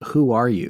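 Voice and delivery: whispered voice. Retelling a question once whispered into a recording machine: retelling own whisper. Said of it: "so I'm whispering into the machine".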